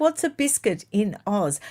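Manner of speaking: ordinary talk, nothing marked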